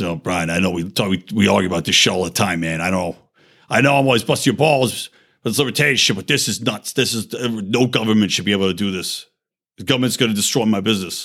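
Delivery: imitated Long Island accent. Retelling what a man who often argues with Brian came over and said, in a put-on Long Island accent. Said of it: "he's got a fucking Long Island accent".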